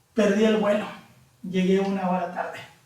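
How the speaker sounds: plain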